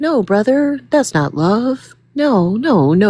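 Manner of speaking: slow, robotic, bot-like grandmother voice. Mocking a group by imitating them: Get Out grandmother voice. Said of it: "sound like the, the grandmother from Get Out".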